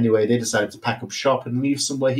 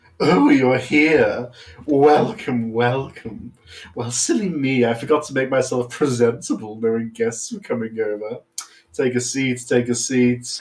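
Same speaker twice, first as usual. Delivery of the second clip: refined, elegant, gracious-sounding villain voice; 2 semitones lower than usual. Villain welcoming arriving guests to his suite: fancy villain voice. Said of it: "very good fancy villain voice".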